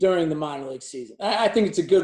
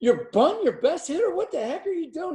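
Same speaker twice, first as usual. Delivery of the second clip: mock, very high, shouted heckling yell; 12 semitones higher than usual. Retelling how a fan in the bleachers heckled the bunt call: imitating a fan yelling. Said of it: "He's yelling at me".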